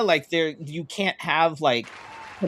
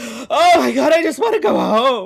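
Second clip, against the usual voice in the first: loud, high, fake tearless sobbing; 9 semitones higher, 7 dB louder than usual. Mocking a public figure walking by with no tears: Erica Kirk impression, mock crying. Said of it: "Erica Kirk walking by, no tears".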